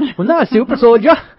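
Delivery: put-on Newcastle accent. Repeating what a man said about being called a super soldier, in a Newcastle accent. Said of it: "what was that accent, accent again?".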